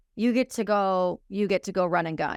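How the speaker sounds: ordinary delivery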